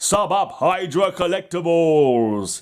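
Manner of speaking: attempted slow, high-pitched advertising announcer voice. Signing off a blog video, the speaker tries an attempted advertising voice. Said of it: "say that in a proper advertising voice".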